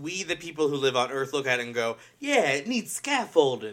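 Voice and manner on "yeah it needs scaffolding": put-on half New York, half California accent. Speaker quotes what people on Earth say, in an almost New York, California accent. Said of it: "I don't know what accent was that".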